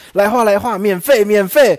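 several voices, loud, high, drawn-out words. Recalling how the three of them called out passing the hall: retelling a shout. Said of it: "我们三个就大喊说".

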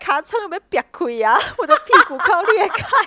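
mock loud, high calling out in Taiwanese. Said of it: "很大声的用台语就说".

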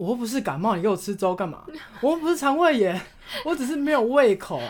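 irritated outburst, rising pitch. Retelling jumping up in bed to answer mom: retelling an irritated outburst. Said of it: "脾气很差".

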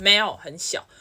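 put-on curt tone. Retelling how a man suddenly answered the speaker's question, imitating his curt rude tone. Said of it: "就这个语气哦".

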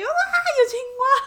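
put-on shriek, very high and very slow. Recalling a frog jumping in when the door opened: retelling a scream. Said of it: "我就尖叫".

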